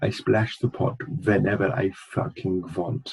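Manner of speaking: put-on, bad Russian accent. Quoting a film character to mock his accent: Teddy KGB's bad Russian accent. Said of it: "who's like".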